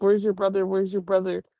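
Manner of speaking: mock tearful, crying, frantic, irrational pleading. Retelling what she kept saying while out there: imitating someone crying. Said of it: "crying and just being very irrational".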